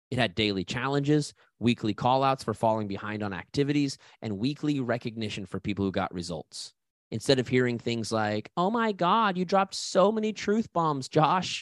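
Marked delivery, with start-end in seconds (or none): 8.5-11.6 high, drawn-out, over-the-top diva voice. Quoting things people used to say: exaggerated diva voice. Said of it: "saying this in my best diva voice".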